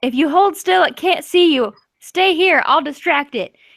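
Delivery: high-pitched shouted call. Voicing a character who stands up as a giant creature hunts them, yelling. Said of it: "Ian stands up and yells".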